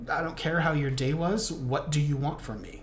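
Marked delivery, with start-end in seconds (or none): none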